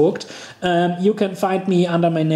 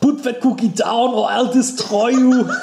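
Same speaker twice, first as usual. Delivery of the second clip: put-on Austrian accent, pitched up, hitting every word; 6 semitones higher than usual. Two speakers joke about people forcing Austrian accents, Arnold Schwarzenegger impression. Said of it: "It turns Austrian really quickly".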